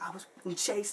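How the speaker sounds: high, frantic, freaking-out panicked cry. Recounting calling an ex-girlfriend after being chased, retelling freaking out. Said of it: "I'm like freaking out".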